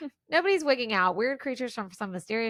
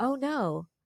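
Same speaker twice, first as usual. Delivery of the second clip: mock unbothered, way too calm, mild little remark; 2 semitones higher than usual. Mocking the movie's characters for reacting to chaos: imitating an overly calm reaction. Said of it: "everybody is way too calm in this movie".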